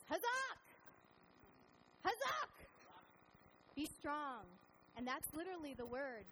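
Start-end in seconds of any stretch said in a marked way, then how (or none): 0.1-4.5 very high-pitched, drawn-out rallying cheer. Describing a tiring hike, retelling an encouraging yell from someone turning around. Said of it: "turns around to you and yells".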